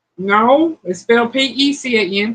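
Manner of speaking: ordinary talk, nothing marked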